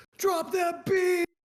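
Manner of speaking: high, slow, belted hype DJ shout.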